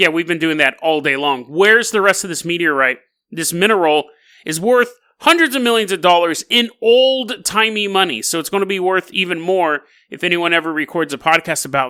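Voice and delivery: plain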